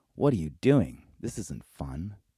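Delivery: ordinary delivery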